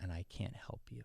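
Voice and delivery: acted-out crying words, tearful and breathy, whispered. Retelling his father's words as the father cries harder: imitating his father crying harder. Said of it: "then he starts crying more and he says".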